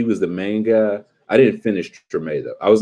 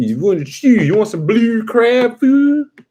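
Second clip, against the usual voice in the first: put-on Baltimore accent, much higher; 13 semitones higher, 3 dB louder than usual. After saying you love New Orleans accents, show the contrast by imitating a Baltimore accent. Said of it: "But Baltimore".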